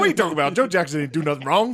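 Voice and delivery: high, defensive, protesting tone. Mimicking how Matt defended Joe Jackson: imitating Matt defending someone.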